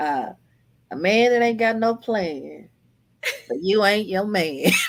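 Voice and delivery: folksy country twang. Quoting a character from the book, say her line in a country twang. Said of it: "I did it in my country twang".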